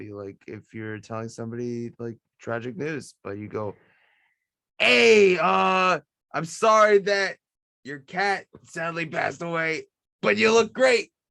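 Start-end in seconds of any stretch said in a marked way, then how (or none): 4.8-11.0 very loud, slow, forced fake cheerfulness. Showing how saying tragic news loudly can sound happy: loud, falsely happy voice. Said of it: "you say it loud enough, maybe you'll sound happy".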